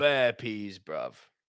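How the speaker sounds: acted brash, cocky street-talk swagger with slang. Retelling a reply to a man who came up: imitating a cocky swagger. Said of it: "thinking I was Billy Big Bollocks".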